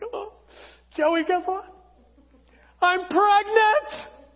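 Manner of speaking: high, all-excited, bursting voice. Acting out a woman's announcement: imitating her excitement. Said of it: "She gets all excited".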